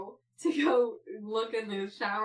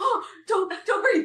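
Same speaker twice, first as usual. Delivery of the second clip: high, loud panicked shouting. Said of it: "She's like".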